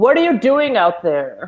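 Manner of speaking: very middle-ground, neither masculine nor feminine voice. Voicing a character calling out to someone in the water: very middle ground voice. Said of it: "it's like a very middle ground voice".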